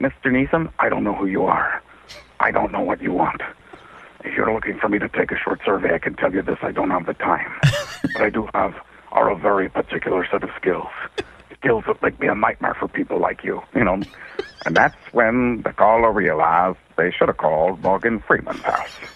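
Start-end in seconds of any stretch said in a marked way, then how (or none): 0.0-13.6 breathy, whispered delivery. Imagining a telemarketer calling an actor's house: Liam Neeson impression. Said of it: "you call Liam Neeson's house".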